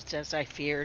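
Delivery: low, hushed mutter to oneself. Player character speaking to himself after finding scorch marks; low voice to himself. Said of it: "say to my kind of to myself in a low voice".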